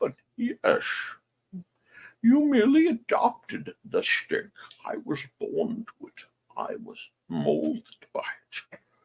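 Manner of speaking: hushed, breathy voice, breathed out softly. Replying to another participant, the speaker slips into a Bane voice. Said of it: "slip into my oral knots Bane uh, voice".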